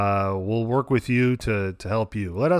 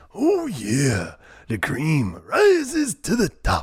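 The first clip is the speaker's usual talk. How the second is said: high, slow, drawling growl without gravel. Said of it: "you can only say it in a Randy Macho Man voice".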